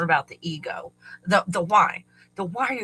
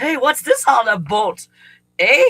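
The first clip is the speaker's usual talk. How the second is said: put-on bad Canadian accent, loud and slow; 6 semitones higher, 9 dB louder than usual. Imagining arriving at the border, attempting a bad Canadian accent. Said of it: "as close as I can get to being Canadian".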